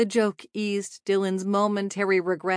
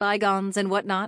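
ordinary delivery, nothing marked

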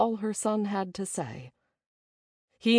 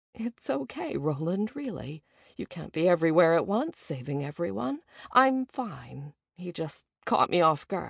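plain

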